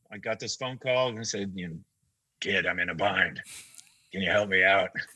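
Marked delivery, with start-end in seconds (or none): 2.4-4.8 rough, smoke-worn, raspy smoker's voice. Retelling a phone call asking a kid for help, in a smoker's voice. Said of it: "this smoker's voice".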